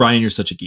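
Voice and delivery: ordinary talk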